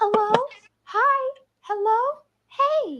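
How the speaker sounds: eerie doll-like voice, very high, slow, creepy. Retelling an unseen voice circling the fence line, in a creepy doll voice. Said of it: "like that creepy doll voice".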